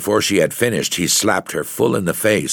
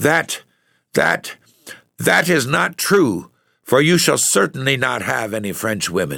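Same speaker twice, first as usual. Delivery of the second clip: choked, faltering, stammering voice full of fury; 4 semitones higher than usual. Narrator reading a woman answering a laughing officer, voice choked with rage. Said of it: "she stammered out in a voice choked with rage".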